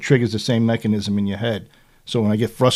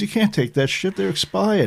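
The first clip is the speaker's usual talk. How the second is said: imitated yell, higher pitch; 10 semitones higher than usual. Retelling what the son said after taking expired pills: imitating son yelling. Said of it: "basically yelled at me".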